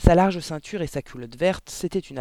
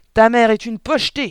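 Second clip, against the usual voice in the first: shrill bark at full volume; 7 semitones higher, 8 dB louder than usual. Answering a frightened, stammering child, a woman barks. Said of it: "aboya mademoiselle Le Gourdin".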